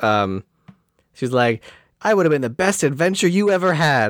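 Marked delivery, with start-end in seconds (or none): 2.0-4.1 mock screaming, higher pitch. Retelling a character's line while discussing a film: imitating someone screaming. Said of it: "she at one point starts screaming".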